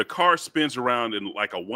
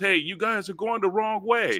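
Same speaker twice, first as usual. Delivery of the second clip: very high, top-of-the-lungs scream, acted out; 9 semitones higher than usual. Telling a story about drunk people yelling at a car, retelling their scream. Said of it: "they're screaming at the top of their lungs".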